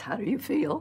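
trembling, wavering, shaky voice, pitched high. Retelling what Katharine Hepburn asked you after you crawled out of the water, imitating Katharine Hepburn's shaky voice. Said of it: "she said in that shaky voice".

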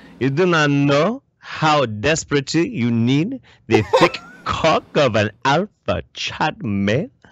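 sultry, sexy Quebec French accent. Teasing Benjamin, the speaker talks in a sexy French Quebec-y accent. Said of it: "this sexy, sexy French Quebec-y accent".

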